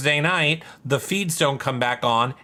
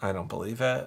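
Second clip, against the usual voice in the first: ordinary delivery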